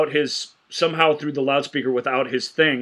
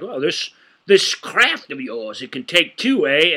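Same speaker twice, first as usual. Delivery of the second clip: cranky, curmudgeonly character voice. Retelling a film scene, quoting a grumpy character: imitating a curmudgeonly character. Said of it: "the general curmudgeon guy's all like".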